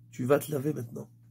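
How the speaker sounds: serene, calm, firm, soft-spoken tone. Showing how to give an order without shouting: calm, serene, firm. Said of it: "si je parle calmement, sereinement, mais fermement".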